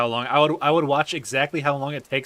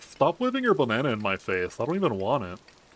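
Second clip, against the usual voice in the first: swooping dubbed monkey voice, pitch swinging wildly; 3 dB quieter than usual. Retelling an old Vine of someone dubbing a monkey: impression of an old monkey dub Vine. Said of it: "That was an A plus impression".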